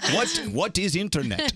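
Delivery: put-on Russian accent. Introducing a favorite old clip, the speaker quotes it in a Russian accent. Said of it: "I like it with the Russian accent".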